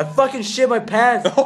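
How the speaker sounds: exasperated blurting. Telling a story about a fellow trainee and their trainer, retelling a frustrated outburst. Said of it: "eventually like gets fucking frustrated".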